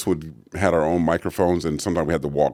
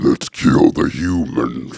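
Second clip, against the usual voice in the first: guttural orc voice, louder, slower; 3 semitones lower, 5 dB louder than usual. Demonstrating a made-up voice for orcs: guttural orc voice. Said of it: "orcs are just very guttural".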